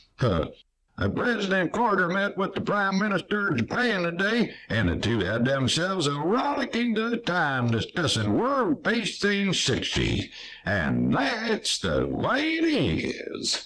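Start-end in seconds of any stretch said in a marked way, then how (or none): 1.1-10.3 high-pitched, drawling Texas accent. A newsman shows how a newscast would sound in a Festus on Gunsmoke voice. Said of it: "shouldn't sound like Festus on Gunsmoke".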